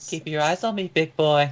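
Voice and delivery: high woman's voice. Voicing Raimi holding stones in hand: Raimi in a woman's voice. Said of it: "says in a woman's voice".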